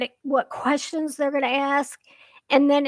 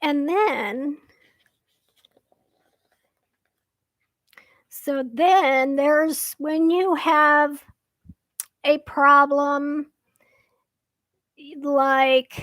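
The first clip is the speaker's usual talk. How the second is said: voice giving out from getting worked up. Getting worked up while explaining a problem, voice starting to give out. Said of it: "my voice is starting to go because I'm getting so worked up".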